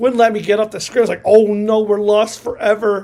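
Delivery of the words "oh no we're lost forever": normal talking voice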